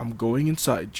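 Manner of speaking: usual speaking voice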